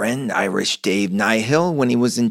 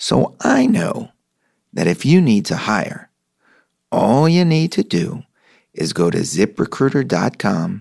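calm, understated, downplayed, matter-of-fact tone. A host reading a ZipRecruiter ad, trying to sound matter-of-fact. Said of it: "tell you as matter-of-factly as I can".

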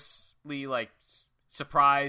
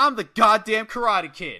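very loud, high, bellowed boastful yell; 7 semitones higher, 8 dB louder than usual. Speaker recounts a scene, quoting the man right after his kick: retelling a yell. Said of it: "he yells".

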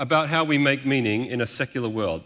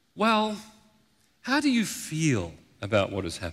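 mock kind, caring therapist voice; 2 semitones higher, 4 dB quieter than usual. Presenter describing how a therapist questions a client, imitating a therapist's caring voice. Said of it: "ask in a caring voice".

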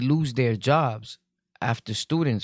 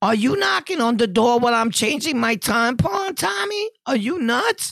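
very high, shrill, loud screaming outburst; 12 semitones higher, 4 dB louder than usual. Imagining a lady yelling at a man who knocked on her door, imitating her screaming. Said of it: "just screams out".

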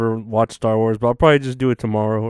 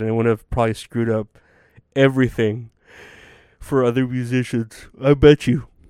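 talking through a yawn. A speaker recording at the end of the night, yawning. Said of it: "I'm sorry, I'm yawning".

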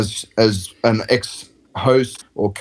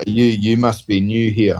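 mock dry, flat, expressionless deadpan delivery. Retelling what he said to her: imitating a deadpan delivery. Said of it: "he deadpanned her and goes".

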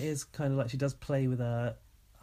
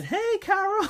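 put-on very high, loud girl's voice; 7 dB louder than usual. Showing how the greeting sounds to them: imitating Dylan saying hey Carol. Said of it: "it sounds like he's going".

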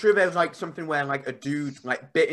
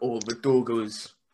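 "doggos" drawled slowly, Scandinavian style. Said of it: "they sound like wolves".

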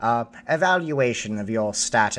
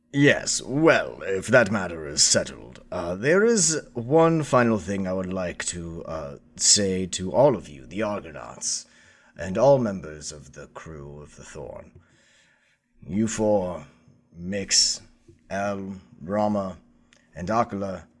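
low, ceremonial, formal head-of-state voice; 4 semitones lower than usual. The game master addresses the Argonauts and the Thorn's crew as the Chancellor of the Republic. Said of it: "as the Chancellor of the Republic, / as the Chancellor of the Republic".

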